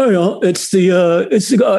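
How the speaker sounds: put-on high, fast Cockney English accent.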